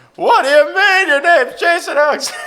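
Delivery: belted, very high, very loud comic voice. Showing the others a pretty good impression: Jerry Seinfeld impression. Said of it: "I could do a pretty good Jerry Seinfeld impression".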